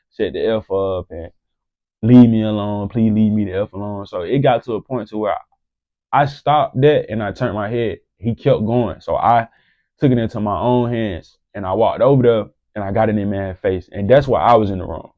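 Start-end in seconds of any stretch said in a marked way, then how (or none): none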